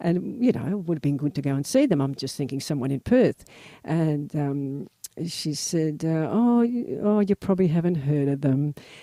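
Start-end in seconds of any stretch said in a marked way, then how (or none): 6.3-8.7 put-on heavy Scottish accent. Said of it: "a very heavy Scottish accent".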